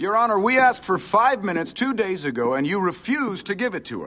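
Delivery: loud shouting. A defense attorney argues with the judge in court, shouting. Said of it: "You are shouting at the court".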